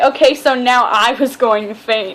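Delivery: ordinary delivery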